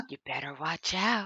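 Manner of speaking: hushed voice. Retelling how a mother warned her daughter: imitating a whispered warning. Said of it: "she, like, whispered it in her ear".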